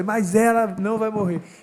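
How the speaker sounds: heated, high-pitched shouting. On a podcast, a speaker recounts shouting at someone at home, retelling a shout. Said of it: "aí eu dei um grito com ela".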